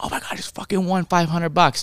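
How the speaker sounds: going-nuts excited, high, thrilled outburst. Retelling thinking they'd won $500 at a bar at 2 a.m., acting out going nuts. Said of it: "we're going nuts".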